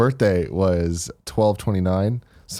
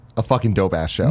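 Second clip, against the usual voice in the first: normal talking voice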